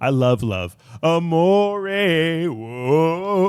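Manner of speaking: amore stretched out, high and slow. Imitating what Mister Wonderful does on Shark Tank whenever love comes up: Mister Wonderful impression. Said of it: "he goes".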